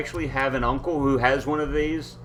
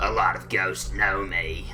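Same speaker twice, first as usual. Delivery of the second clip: raspy, scratchy spooky ghost voice, low and slow; 7 semitones lower than usual. Performing a silly ghost character and claiming that many ghosts know him, in a scratchy spooky ghost voice. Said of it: "they have one of those little voice modulators".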